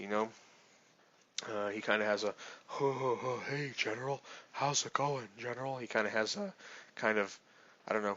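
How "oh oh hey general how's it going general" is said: wheezy, breathy, cottony voice, all breath. Describing a character who recognizes you from a war, Beodur's breathy, wheezy voice. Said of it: "like a very bre- breathy".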